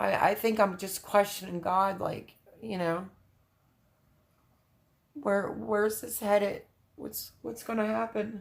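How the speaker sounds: teary, on the verge of crying. Speaker talking about staying strong and having faith, now getting teary-eyed. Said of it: "now I'm like getting teary eyed".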